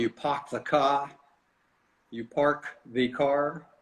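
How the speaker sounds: Boston accent with words cut short. Describing how Northerners clip their words, saying a phrase in Boston accent. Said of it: "In Boston".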